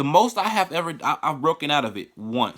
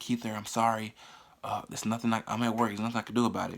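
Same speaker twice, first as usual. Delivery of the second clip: apologetic, soft half-whisper under the breath; 4 semitones lower, 8 dB quieter than usual. Retelling what mom said on the phone from work: imitating mom half-whispering. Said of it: "She'll whisper and be like".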